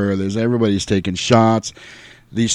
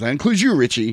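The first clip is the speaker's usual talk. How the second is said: firm, stern scolding tone; 4 semitones higher than usual. Retelling a movie scene, quoting George Clooney: imitating George Clooney yelling at kids. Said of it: "like he's yelling at a bunch of kids".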